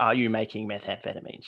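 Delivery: mimicked flat deadpan delivery. Retelling local cops at the door asking a question, mimicking a deadpan question. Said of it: "just deadpan".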